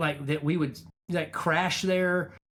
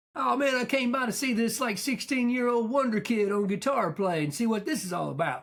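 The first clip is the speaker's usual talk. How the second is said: cocky swaggering voice, pitched up; 6 semitones higher than usual. Retelling a band leader walking in to watch rehearsal: imitating a cocky guy. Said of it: "all cocky".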